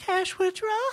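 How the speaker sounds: falsetto voice. Thanking listeners for joining and repeating the show's name: falsetto voice. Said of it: "falsetto voice".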